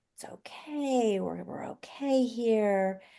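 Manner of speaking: gentle, soft, soothing, calming hush. Showing how to respond to a baby's needs, in a soft voice. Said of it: "I'm going to be using a soft voice".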